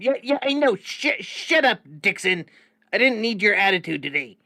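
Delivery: very loud, high, shouting yell. In a game, a character yells back at a droid beeping at him: yelling at a droid. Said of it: "I'm yelling back at him".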